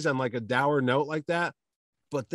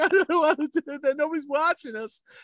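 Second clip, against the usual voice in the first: put-on very high, tearful fake sobbing; 13 semitones higher than usual. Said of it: "I start crying".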